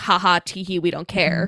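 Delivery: ordinary delivery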